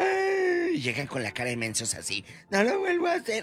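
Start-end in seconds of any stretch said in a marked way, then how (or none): 2.5-3.3 put-on whiny crying, much higher and faster. Mocking the crybaby who manipulated you: mock whiny crying. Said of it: "el llorón".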